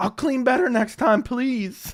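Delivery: high, begging voice. Acting out trash talking while being beaten up: imitating himself getting beaten up. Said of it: "that's my impression of me getting beat up".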